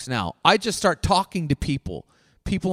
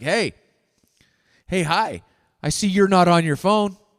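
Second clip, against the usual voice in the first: put-on loud voice. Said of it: "I'm loud and obnoxious".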